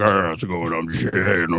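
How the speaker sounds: odd, cute and cuddly warped voice. Retelling how the other speaker sounded after the mixer glitch: imitating a weird-sounding voice. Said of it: "it made you sound weird too".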